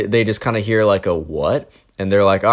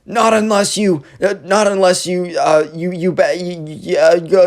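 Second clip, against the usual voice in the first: imitated stutter, pitched higher; 8 semitones higher than usual. Retelling what a kid said during a standoff: imitating someone stuttering. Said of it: "the Minecraft kid's, like, stuttering".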